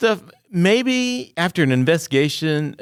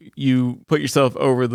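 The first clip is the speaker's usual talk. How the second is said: normal talking voice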